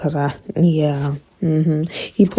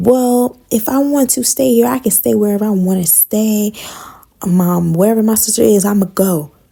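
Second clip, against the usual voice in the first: high, defensive, indignant tone; 5 semitones higher than usual. Retelling what a woman said when asked about staying, mock-defensive reply. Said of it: "she got all defensive saying".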